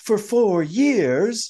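put-on very high-pitched, theatrical little stage-kid voice. Imitating a girl's line reading that sounded like a kid from Annie. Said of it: "sounded like one of the kids from Annie".

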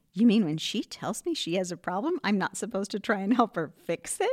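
bewildered, dumbfounded, baffled, disbelieving tone. Retelling a husband's reply to the women coaching him: imitating a dumbfounded husband. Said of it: "He says this dumbfounded".

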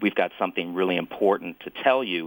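ordinary talk

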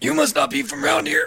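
put-on old man character voice, pitched very high. Playing a local who is greeting a traveler, in an old man voice. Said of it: "Losing my old man voice".

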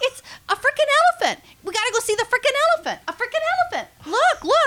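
mock very high, shrill, rushed, thrilled little-girl voice. Retelling a little girl at the zoo calling her mom: imitating an excited little girl. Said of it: "She was so excited".

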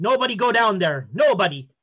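put-on Nordic-accented character voice. Play the guy heard up top after the footsteps, speaking in a Nordic voice. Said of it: "you hear the Nordic voice guy say".

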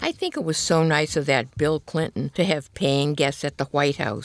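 ordinary delivery

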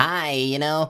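silly, awful little gnome bard voice. Recalling the gnome bard they played, the speaker does their awful gnome bard voice. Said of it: "I did this awful voice for it".

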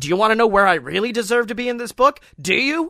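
high screaming rant, words rushed and tumbling out. Recounting someone ripping a book away and flipping through it, retelling a scream. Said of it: "the whole time screaming".

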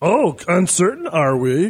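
wise, small alien sage creature voice. Asked for his best Yoda impression, the speaker answers in a Yoda impression. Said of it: "how about your best Yoda impression".

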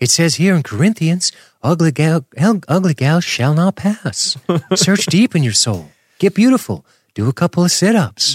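high-register put-on character voice. Acting out a man lecturing the sisters, in a high register voice. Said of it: "I got this high register voice".

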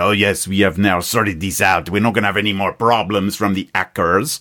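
put-on speaking with a French accent. Retelling a security head's statement on air: French accent. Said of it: "obviously doing a French accent".

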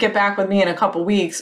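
ordinary talk, nothing marked

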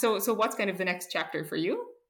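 normal talking voice

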